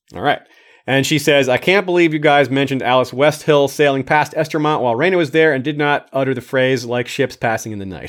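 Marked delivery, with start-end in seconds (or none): none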